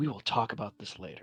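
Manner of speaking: composed, utterly calm delivery in soft voice. Voicing a mother who composes herself: very calm voice. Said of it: "she says in the most calmest voice".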